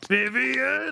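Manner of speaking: strange, very high yelled word. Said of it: "It's that weird tone".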